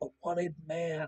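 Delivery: barely audible, hushed, very quiet half-whisper. Narrating a character who looks around and speaks his line in a half-whisper. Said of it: "he whispers".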